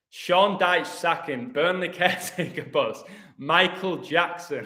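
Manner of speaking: high, slow reading while cracking up laughing. Reading a news headline aloud, laughing while reading. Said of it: "I'm nearly crying".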